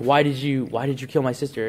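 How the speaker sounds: ordinary talk, nothing marked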